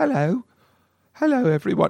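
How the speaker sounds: put-on British man's accent. Speaker imitates a woman's British husband greeting everyone: put-on British accent. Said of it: "he's british so he talks like this".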